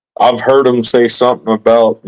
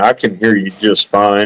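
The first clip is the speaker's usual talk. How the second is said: plain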